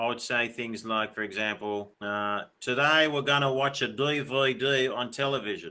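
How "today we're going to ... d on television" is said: broad, thick, laid-on Australian accent. Showing how they would talk speaking australian full on: full-on australian accent. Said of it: "if I was speaking Australian like full on".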